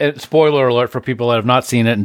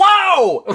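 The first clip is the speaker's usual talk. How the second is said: very high, full-throated scream on "whoa". Speaker reenacting his scream while watching a movie on headphones, retelling a full-throated scream. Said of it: "Like in the plane, full throated".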